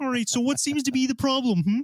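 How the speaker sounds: high-pitched puppet frog voice. Imagining a session with a Federation psychologist, speaker does a Kermit the Frog voice. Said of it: "it's like Kermit the Frog in like a like a tweed suit".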